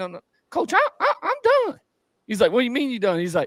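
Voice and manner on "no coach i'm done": put-on high-pitched voice, much higher. Retelling what a player on the bench told his coach, in a high-pitched voice. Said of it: "he talks real like high pitch".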